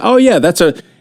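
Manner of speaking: put-on sarcastic voice. Retelling what a former boss said in a meeting: imitating sarcastic boss. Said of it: "he was very sarcastic".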